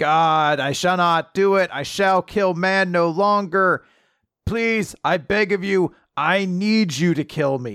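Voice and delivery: put-on screaming voice. Speaker recapping a comic's final spread, retelling God screaming. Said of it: "And he's screaming".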